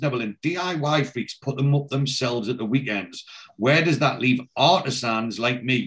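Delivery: ordinary delivery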